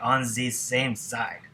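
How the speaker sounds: very bad, put-on German accent. Explaining a memory trick for the e and z rule, in the worst german accent. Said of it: "In your worst German accent".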